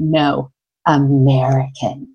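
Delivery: low, scornful voice thick with contempt and disdain. Retelling what a woman at the nail salon said: imitating deep disdain. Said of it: "with the most deep disdain".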